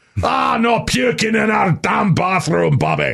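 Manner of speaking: put-on Scottish accent, very high pitch. Retelling the father's joke about a hallucinated voice; Scottish accent. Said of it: "auditory hallucinations with a Scottish accent".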